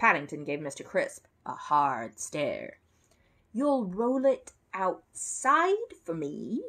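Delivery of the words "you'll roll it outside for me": high, stunned and disbelieving echo. Offered only to have the stone rolled outside, repeating it back, disbelieving. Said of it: "hardly able to believe his ears".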